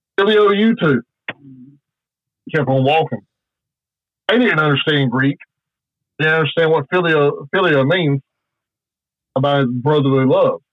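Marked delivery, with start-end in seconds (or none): 0.2-1.1 mocking, sarcastic delivery, pitched up. Retelling a reply to a guy who kept saying love you, retelling a sarcastic reply. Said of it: "just being sarcastic".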